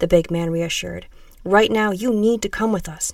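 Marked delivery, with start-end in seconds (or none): none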